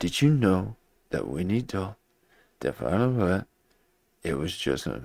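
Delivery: slow, halting cadence with dramatic pauses breaking phrases. Imitating how someone drags out an introduction: imitating dramatic pauses. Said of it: "that cadence".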